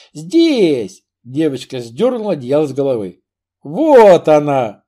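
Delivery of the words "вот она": loud, happy, delighted joyful cry. Platon finds Marie as she pulls the blanket off her head; joyful exclamation. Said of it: "радостно воскликнул Платон".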